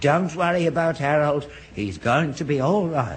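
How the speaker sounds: plain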